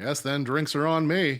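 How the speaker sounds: loud announcing voice. In the game, a character announces to the whole bar, raised voice. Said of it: "I will raise my voice for this".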